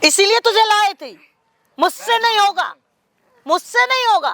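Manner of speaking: shouting angrily. When someone refuses to do the dirty work, a character yells; angry yelling. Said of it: "इधर तुम चिल्ला रहे हो।".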